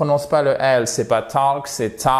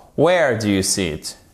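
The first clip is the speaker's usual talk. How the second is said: falling pitch at the end on "see it"; 4 semitones lower than usual. Teacher showing a question not answerable by yes or no: pitch falls at the end on 'it'. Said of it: "votre intonation, elle descend".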